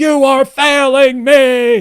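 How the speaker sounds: very loud, shrill, drawn-out, very high villain yell. Quoting the film's villain's line from a scene: imitating someone yelling. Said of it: "he's yelling".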